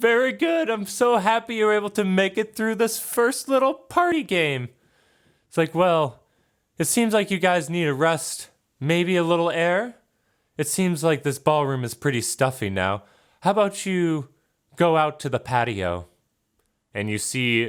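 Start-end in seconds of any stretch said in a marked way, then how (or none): 0.0-16.1 put-on very high-pitched small child voice. A voice echoes through the room to the party holding the skull: Lilith's childish voice. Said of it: "you hear a like childish voice echo through the room".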